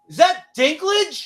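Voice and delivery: shrill, very high, super-loud shouted yell. Retelling a guy in the back of the theater calling out, retelling a super loud yell. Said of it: "he yells it like super loud".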